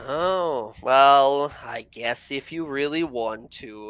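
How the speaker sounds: very slow, dragged-out, sarcastic drawl. Answering in character a request to show the way to the portal: sarcastic. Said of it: "Why are you so sarcastic?".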